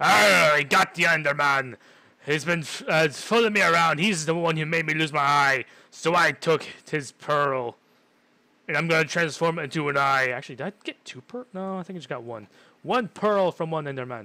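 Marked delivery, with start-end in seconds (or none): 0.0-10.3 very loud, put-on swashbuckling pirate voice. After catching an Enderman in a game, the player talks on in a pirate voice. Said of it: "I sound like a pirate there".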